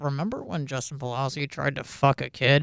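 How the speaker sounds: muttered under breath. Retelling remarks made at a meeting with higher ups: imitating own muttering under breath. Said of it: "making that sort of stuff under my breath".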